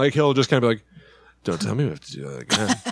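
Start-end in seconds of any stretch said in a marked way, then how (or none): 1.4-2.8 drowsy, barely-awake, sleepy voice. Imitating Bill Murray recording video game lines: sleepy Bill Murray voice. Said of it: "a lot of the time he sounds kinda sleepy".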